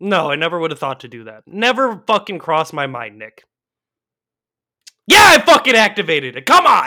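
very loud, exasperated, frustrated yell with swooping pitch. Answering whether the card was activated, yelling in frustration. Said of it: "some super peaks coming from".

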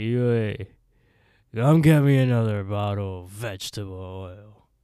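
put-on loud drunk-sounding yell. Retelling a man who locked himself in his room, mimicking his drunk-sounding speech. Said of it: "like he sounds drunk".

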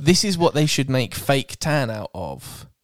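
ordinary talk

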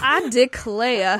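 put-on Southern lady voice and accent. Joking about turning into a southern lady when told to calm down: southern lady voice. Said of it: "you turn into a southern lady".

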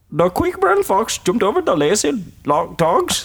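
attempted accent from India. Taking an accent challenge: indian accent. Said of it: "The first accent is Indian".

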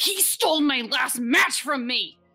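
furious, angry character voice. Voicing a character pushing away a friend: angry character voice. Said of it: "slaps her hands off of him angrily".

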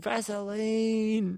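single high-pitched shrieked word. Retelling a talk-show host giving out vaseline tubs, imitating someone screaming. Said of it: "just starts screaming".

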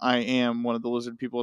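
normal talking voice

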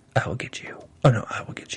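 low, hushed, breathy stage whisper. Retelling two characters' showdown in the woods: imitating a whisper. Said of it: "But they were talking so low".

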